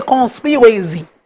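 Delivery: plain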